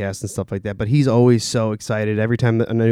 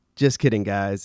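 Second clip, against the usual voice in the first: normal talking voice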